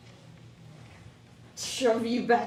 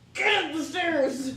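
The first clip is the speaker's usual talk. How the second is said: higher, slow, encouraging yell. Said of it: "encourage her by yelling".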